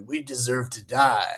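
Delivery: rough, deliberately gravelly gravel-throated delivery. Retelling lines delivered on a film set: gravelly Michael Madsen voice. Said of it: "best Michael Madsen impersonation".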